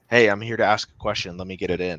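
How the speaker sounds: ordinary delivery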